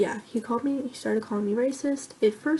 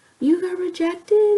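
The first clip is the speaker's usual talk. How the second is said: weird, shrill, very loud and high surprised tone; 9 semitones higher, 9 dB louder than usual. Retelling a boy's remark in class: imitating a very loud, surprised tone. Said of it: "he said very, very loudly".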